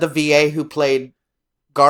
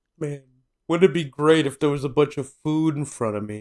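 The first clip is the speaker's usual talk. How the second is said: put-on bored middle-aged dad voice, quieter; 5 dB quieter than usual. Explaining the voice chosen for a role: Bill Murray's bored middle-aged golf dad voice. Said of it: "this like bored middle-aged golf dad voice".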